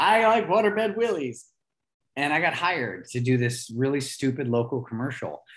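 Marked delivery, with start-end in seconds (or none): 0.0-1.5 shrieking, very high-pitched, loud screaming yell. Speaker reenacts jumping on a waterbed as a kid for a commercial, retelling a scream.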